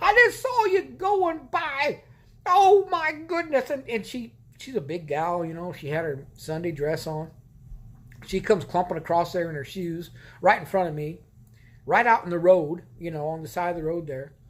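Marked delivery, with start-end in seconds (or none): 0.0-3.7 put-on very high, slow, drawn-out yelling. Retelling what a woman yelled into her phone by the road: imitating a woman yelling. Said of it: "and she's yelling".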